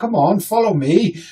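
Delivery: put-on slow, mildly posh, well-spoken accent. Acting out a posh boy leading people along, slightly posh accent. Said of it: "slightly posh boy with slightly posh accent".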